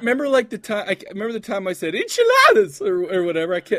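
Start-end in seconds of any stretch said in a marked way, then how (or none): 1.9-2.8 very loud, very high, belted exclamation. Repeating a word from an old bit: sounding like John Travolta. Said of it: "you sounded just like".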